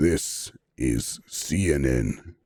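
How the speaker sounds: extremely deep, bottom-of-range low voice. Answering a request despite a tiring voice, in an extremely deep voice. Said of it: "talking on a frequency that that no other human can hear".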